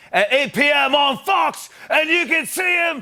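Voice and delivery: jokey put-on British accent with lifted pitch. A host introduces a chef as the first guest, in a put-on British accent. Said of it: "[British accent]".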